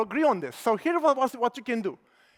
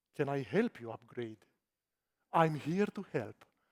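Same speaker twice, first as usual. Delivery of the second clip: even, very hushed, calm, low and quiet voice; 9 semitones lower, 9 dB quieter than usual. Suggesting how to approach old clients about upgrading, in a calm voice. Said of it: "ask them in a calm voice".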